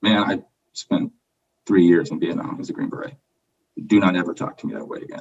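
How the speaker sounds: utterly unruffled, very calm, composed, even-toned delivery. Retelling Garcia's reply after being told the curfew, imitating a very calm tone. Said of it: "very calmly".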